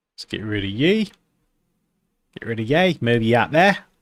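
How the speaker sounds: clumsy, terrible put-on Australian accent. Lining up a layout while talking, in a terrible Australian accent. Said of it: "Apologies for my terrible Australian accent".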